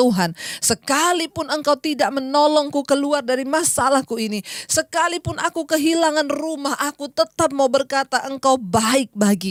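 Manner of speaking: normal talking voice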